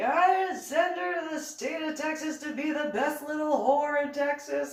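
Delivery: very high put-on yelling voice. Retelling what Dad said on the phone, imitating someone yelling. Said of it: "Why are you yelling at me?".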